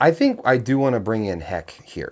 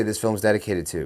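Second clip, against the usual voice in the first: ordinary talk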